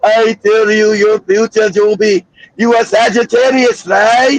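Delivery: put-on Caribbean accent. Speaker imitates a fortune teller telling someone their future, put-on caribbean accent. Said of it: "got one of them Caribbean voices".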